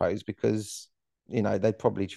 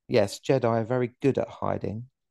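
put-on deadpan delivery, faster. Retelling how a general character delivered a line, mock-deadpan Jack Dee delivery. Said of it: "Very deadpan".

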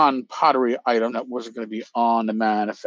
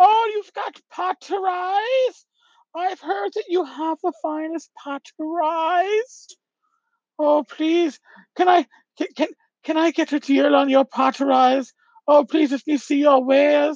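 put-on shrill woman voice, much higher, slower. Retelling a costumed disguise bit to listeners, in a Monty Python woman voice. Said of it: "I was talking like this".

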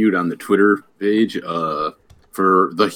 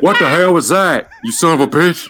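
very high, loud, shrill put-on bellowing holler; 9 semitones higher, 5 dB louder than usual. Answering another speaker while playing Stone Cold: Stone Cold Steve Austin impression. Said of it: "I still do not understand your impression of him".

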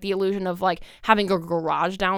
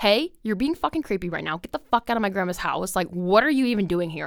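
fed-up, angry, snapped outburst. Retelling snapping at a creepy person in grandma's house, retelling snapping angrily. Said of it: "So I snapped and I was like".

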